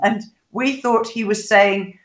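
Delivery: ordinary delivery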